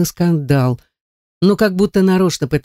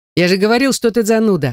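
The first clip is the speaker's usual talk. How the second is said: laughing through the words, pitched up; 6 semitones higher than usual. [name] teases his friend, looking him straight in the eye, laughing. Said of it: "смеется Кирилл".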